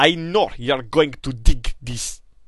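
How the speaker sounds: put-on Russian accent. Host introduces the Nintendo music to listeners: Russian accent. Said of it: "in my best Russian accent".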